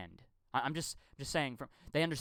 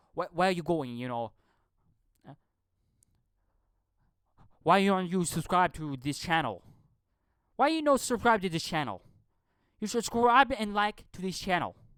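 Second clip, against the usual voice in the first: very loud, put-on broken-English accent; 4 semitones higher, 8 dB louder than usual. Showing how they talk on their channel, imitating broken english. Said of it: "That's how they speak in their broken English".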